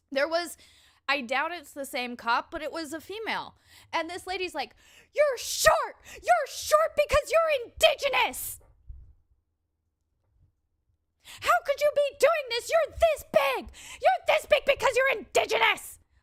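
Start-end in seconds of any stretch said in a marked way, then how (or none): 5.1-15.9 shrieked high-pitched tirade, words hurled out. Retelling what a woman shouted at police officers: imitating a woman screaming. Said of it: "this lady was screaming this at the cops".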